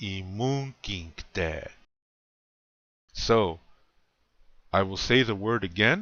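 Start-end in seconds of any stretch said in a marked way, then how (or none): 0.0-1.7 imunkinkte, weight on the second syllable. A language teacher models a word for learners, stress on second syllable of Imunkinkte. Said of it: "The emphasis is on the second syllable".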